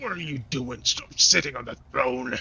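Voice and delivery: put-on goblin creature voice. Narrating a scene with a goblin on a throne, in goblin voice. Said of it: "the kind of goblin kind of sits on the throne and goes".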